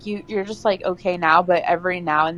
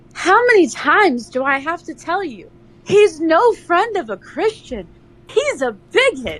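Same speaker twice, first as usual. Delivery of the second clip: very high, slow, dramatic, soaring impassioned declamation; 11 semitones higher, 4 dB louder than usual. Redoing a line for a better take: passionate and dramatic delivery. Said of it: "That was so passionate and dramatic".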